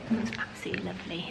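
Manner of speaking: hushed, soft, breathy whisper.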